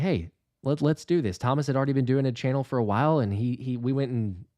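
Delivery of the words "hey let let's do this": normal talking voice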